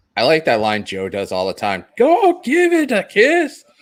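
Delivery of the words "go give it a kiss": put-on Scottish accent, stretched and high. Repeat a line you like that Joe does all the time, in a Scottish-sounding accent. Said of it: "Literally sounds like a Scottish accent".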